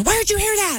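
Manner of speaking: very high, sing-song voice.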